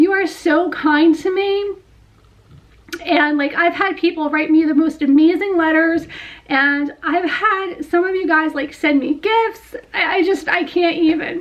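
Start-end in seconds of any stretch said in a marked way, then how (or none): 0.0-1.8 touched, heartfelt, emotionally moved delivery. Speaking to her audience, getting emotional. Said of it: "I'm getting emotional again".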